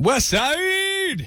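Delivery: with oomph in the chest. A caller tells the radio host which side of Cincinnati she lives on, with oomph in the chest. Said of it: "say it with some oomph in your chest".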